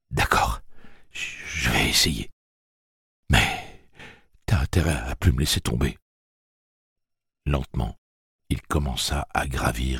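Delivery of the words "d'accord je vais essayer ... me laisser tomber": quavering, trembling murmur, voice shaking. Jake, told to be sincere and stand straight, agrees in a trembling murmur. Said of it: "murmura-t-il d'une voix tremblante".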